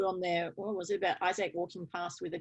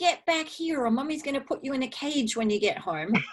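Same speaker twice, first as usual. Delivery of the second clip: put-on shrill, high, loud screaming in a child's voice; 6 semitones higher, 5 dB louder than usual. Retelling Isaac running after him at the service desk, imitating Isaac screaming.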